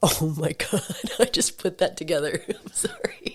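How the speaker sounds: smoker-sounding laugh, holding back a cough. Cracking up at own FOMO line and apologizing, smoker-sounding laugh. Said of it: "You sound like a smoker too, laughing".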